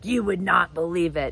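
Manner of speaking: put-on very angry tone. Retelling a woman overheard while working out, imitating her very angry voice. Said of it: "she's using this very angry voice".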